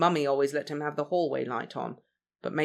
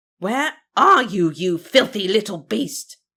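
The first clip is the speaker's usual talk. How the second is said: shrill nasal screech at full volume; 6 semitones higher, 11 dB louder than usual. Narrator voicing the Matron stalking the hallways after Remus: screeching nasal voice. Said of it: "Matron's nasally voice screeched".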